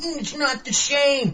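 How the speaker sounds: mock nostalgic whine, high and slow.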